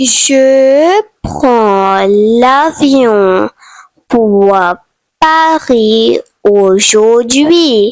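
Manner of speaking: clear, careful French enunciation, lingering on Je. Saying airport sentences in french for learners to practise: said slowly. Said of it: "going to say slowly".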